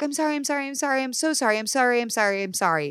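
high, cringing, cowed, cowering voice. Acting out someone who cowers in a shame-filled moment: imitating a cowering apology. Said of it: "somebody cowers and they're like".

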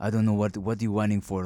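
put-on thick Eastern European accent. Quoting a man in a story, in a thick Eastern European accent. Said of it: "he had this like thick ass like Eastern European accent".

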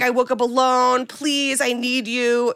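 put-on drunk sobbing, tearful. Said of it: "And Anne's sobbing".

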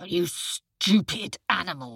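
snarled, beastly, growling tiger voice. Narrating the story, the tiger answers the jackal: growling tiger voice. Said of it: "growled the tiger".

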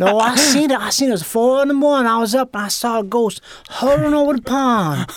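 put-on Cajun accent. Speaker retelling a man's ghost story from childhood, imitating Elster's Cajun accent. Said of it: "full-on Cajun dude".

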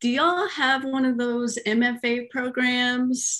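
put-on gentle Missouri accent. Retelling your own call to the University of Miami, in a little Missouri accent. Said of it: "with my little Missouri accent and said".

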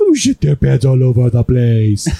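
put-on slow, stretched-out, sing-song baby talk.

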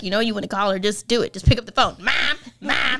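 mocking put-on voice. Retelling how Zach mocks her for not calling her mom: imitating Zach mocking her. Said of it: "he mocks me all day until I do".

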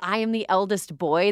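put-on, deliberate, proclaiming yell. Retelling how Kendall yelled a line: imitating Kendall yelling. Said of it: "he yelled".

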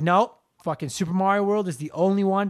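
plain

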